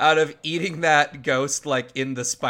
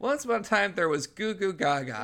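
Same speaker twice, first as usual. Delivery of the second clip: put-on high, babbling goo-goo baby voice; 4 semitones higher, 4 dB quieter than usual. Describing a baby who reads a story to his dad, imitating a baby voice. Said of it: "the baby goes".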